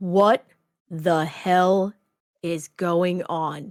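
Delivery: voice dropped way down. Voicing a character in a tabletop scene, in a much deeper voice. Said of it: "This is a much deeper voice".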